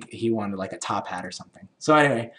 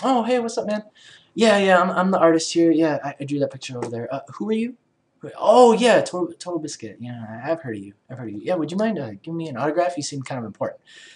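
put-on breezy, casual tone, pitched up; 6 semitones higher than usual. Acting out a planned meeting with an artist he admires: acting all casual. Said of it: "be all casual and just be like".

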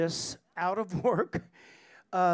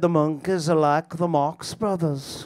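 put-on Liverpool accent, louder; 5 dB louder than usual. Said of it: "That was pretty good".

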